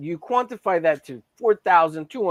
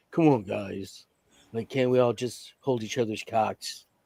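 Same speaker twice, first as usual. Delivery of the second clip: slow, really deep voice; 6 semitones lower, 4 dB quieter than usual. Imitating how a guy they know talks: slow, really deep voice. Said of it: "talks like with with a slow, really deep voice".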